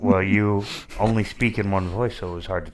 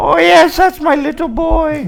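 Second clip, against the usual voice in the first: put-on old woman voice, higher and louder; 9 dB louder than usual. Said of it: "says in the character's voice".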